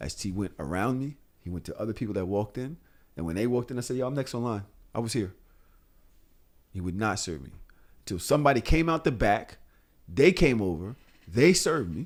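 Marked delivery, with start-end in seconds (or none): none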